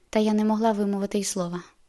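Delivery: plain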